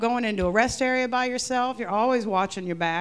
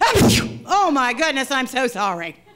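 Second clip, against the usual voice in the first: loud, slow, put-on sputtering through mouthful of spit; 3 semitones higher, 6 dB louder than usual. Recounting dodging a man's advances at a club, retelling talking through spit. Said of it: "I would get my mouth full of spit".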